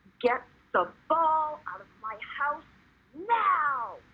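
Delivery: possessed-sounding demonic voice, high and drawn out. A mom retelling how she spoke to her boys, in her exorcist voice. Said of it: "It got replaced by the exorcist voice".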